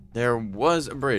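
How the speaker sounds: slow delivery with strong stress on "was".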